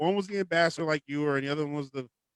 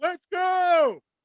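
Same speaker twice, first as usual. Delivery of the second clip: put-on acted-out, high, rowdy drunken hollering; 5 dB louder than usual. Driver retelling a drunk passenger yelling in his car, retelling a drunk yell. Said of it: "He's like yelling".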